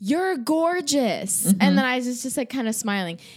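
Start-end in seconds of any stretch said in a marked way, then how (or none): 0.0-1.4 put-on yell, much higher. Retelling what a man yelled to the speaker in a loud place, retelling a yell. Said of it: "He's yelling".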